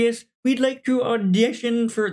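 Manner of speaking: very high, squeaky, deliberately bad frog-puppet voice. Describing auditioners walking in to the secretary, doing a bad Kermit impression. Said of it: "That's a terrible Kermit".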